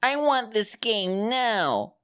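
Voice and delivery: put-on very slow, high, drawn-out whiny baby tantrum. Mocking another speaker as a tantrum-throwing infant: mock whiny baby tantrum. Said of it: "You are an infant slamming on the ground saying".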